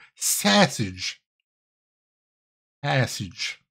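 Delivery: whispered Chicago accent, hitting the "a" in sausage. Teaching Rin how to pronounce a word, in a Chicago accent. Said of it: "which in the Chicago accent is pronounced sausage".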